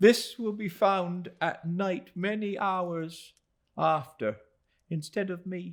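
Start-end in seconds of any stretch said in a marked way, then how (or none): none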